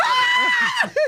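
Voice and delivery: high-pitched, loud, mortified shriek. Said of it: "She's so mortified".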